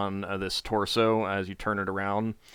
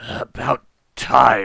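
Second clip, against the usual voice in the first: loud, dry, rattly rasping voice; 2 semitones higher, 7 dB louder than usual. Describing a voice that speaks to the listener, the narrator voices it: dry, rattly voice. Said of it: "the voice is like kind of a dry, rattly sound".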